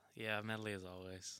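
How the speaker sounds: said depressingly. Answering whether this is the new intro: said depressingly. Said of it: "He said it so depressingly".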